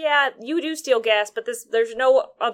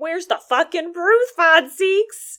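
imitated shout, higher and louder; 7 semitones higher, 4 dB louder than usual. Retelling a courtroom trial, imitating own shout at the prosecutor. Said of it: "I'm shouting".

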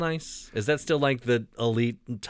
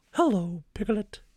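put-on very high, squeaky, grandma-bear storybook cartoon voice; 10 semitones higher than usual. Showing a co-host a new voice, doing a Winnie the Pooh voice. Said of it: "I think I have a new voice".

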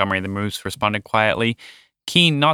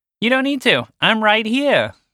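little mouse voice, very high, squeaky; 9 semitones higher than usual. Montgomery the Mouse answers his moose friend from a nearby ledge, with a grin. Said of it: "replied with a grin".

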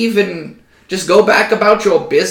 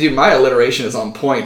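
usual speaking voice

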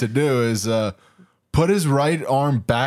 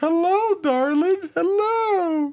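very high, sugary, sweet nice-lady voice. Retelling how a dude's mom greets him on video, imitating a sweet nice lady. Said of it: "she's so nice".

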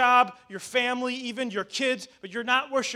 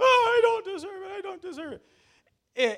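mock crying, much higher, slower; 10 semitones higher than usual. Retelling what he kept saying after being yelled at, imitating someone crying. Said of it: "okay, stop crying now".

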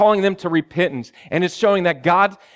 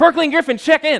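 full-throated, high, loud, acted-out shout; 9 semitones higher than usual. Retelling calling out for two to check in: imitating own loud yell. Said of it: "I just yell as loud as I can".

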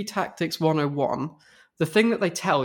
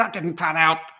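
mild, small yelling exclamation. Describing a DVD board game's lines: imitating Jack Bauer yelling. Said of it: "Jack Bauer yelling".

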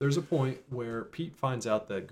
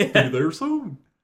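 booming, raised, high, very loud cartoon dog voice; 6 semitones higher, 11 dB louder than usual. Retelling a cartoon scene, imitating Goofy getting directions: Goofy voice. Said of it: "That's a good Goofy".

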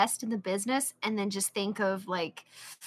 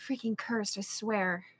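quiet, indistinct mumbling under the breath; 4 dB quieter than usual. Voicing a character who mutters a curse, mumbling. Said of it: "I'm going to just mumble like".

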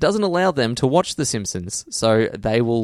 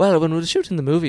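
put-on Irish accent, pitched up; 6 semitones higher than usual. Retelling how Colin Farrell sounded in a press kit: Colin Farrell impression, Irish accent. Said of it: "he's like".

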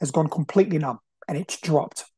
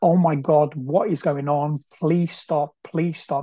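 put-on sobbing, pleading tone. Retelling lying in pain in the bedroom: retelling sobbing and begging. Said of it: "I'm sobbing and I'm begging".

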